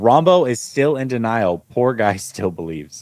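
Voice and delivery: ordinary talk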